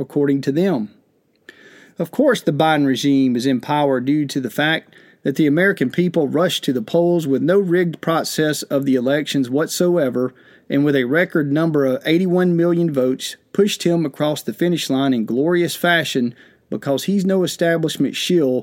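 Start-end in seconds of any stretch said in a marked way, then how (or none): none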